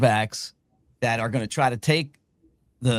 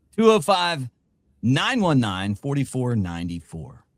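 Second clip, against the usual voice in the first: put-on radio broadcaster announcer voice. Reading out a sponsor's phone number: put-on broadcaster voice. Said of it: "in my great bro-, broadcaster voice".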